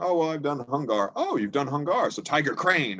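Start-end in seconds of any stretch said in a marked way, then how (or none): 1.2-3.0 heavy, thick, laid-on put-on Chinese accent. Recalling an elderly chinese gentleman replying about past training; thick chinese accent. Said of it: "real thick Chinese accent".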